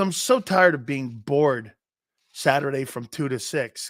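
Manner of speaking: usual speaking voice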